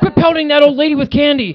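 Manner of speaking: very loud, high-pitched, shrill yelling bellow. Recalling walking in a parade with little kids: retelling yelling at kids. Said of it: "We're yelling at them the whole time".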